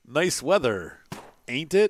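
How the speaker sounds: strange, robotic-sounding voice. Speaker quoting a game character's dialogue, robotic game character voice. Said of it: "weird and robotic".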